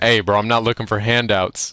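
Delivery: ordinary delivery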